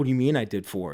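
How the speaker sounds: mock nervous delivery. Retelling a call with the girl who gave them: imitating own nervous question. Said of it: "I start getting nervous".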